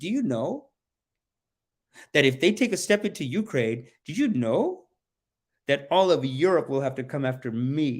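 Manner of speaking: snide, mean, bullying, boastful tone. Paraphrasing what he is saying: imitating someone being mean. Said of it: "Now he's being mean".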